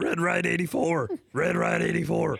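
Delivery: put-on raspy Texan drawl. Show how a man's voice sounds by imitating his call in a raspy texas country twang. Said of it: "raspiness in it ... that Texas country uh, twang".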